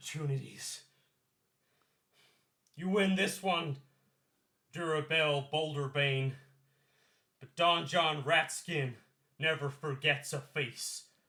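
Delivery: put-on Southern accent. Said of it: "with a southern accent".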